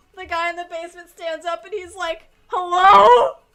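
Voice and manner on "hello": put-on frightened voice, higher and louder. Retelling a video where a man in a basement calls out: imitating a scared voice. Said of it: "Like, really scared".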